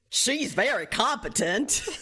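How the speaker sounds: slow, heavier Florida drawl.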